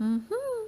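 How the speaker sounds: high-pitched mhm, dipping then rising. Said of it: "ada yang menurun lalu menaik seperti".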